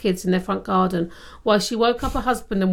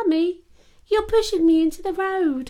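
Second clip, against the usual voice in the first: put-on very high-pitched small child voice; 9 semitones higher than usual. Retelling a mother's New Year's Eve walk home, voicing her young child: little child voice. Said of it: "I like it when you do the voices".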